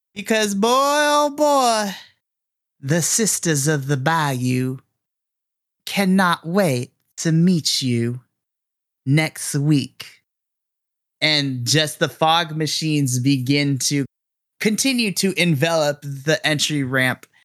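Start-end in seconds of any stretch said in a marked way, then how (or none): 0.2-10.1 menacing, cocky, sinister voice with swooping pitch. Louisiana Man walks down the ramp, microphone in hand, with sinister arrogance. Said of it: "in a very sinister kind of arrogance".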